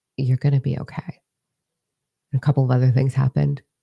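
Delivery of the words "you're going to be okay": put-on whispering. Retelling what a hand on the shoulder said: retelling a whisper. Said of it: "that hand on my shoulder whispers to me".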